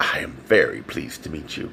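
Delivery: low, sultry, sensual, a little creaky. A woman being introduced greets the narrator, in a deep, sensual voice. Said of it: "in a deep, sensual voice said".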